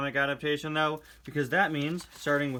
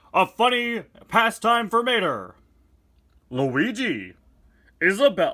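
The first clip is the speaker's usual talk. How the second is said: slow, high-pitched, booming delivery; 6 semitones higher, 8 dB louder than usual. Reading comic narration aloud: Super Smash Bros. announcer voice. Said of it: "an impression of the Super Smash Bros. announcer".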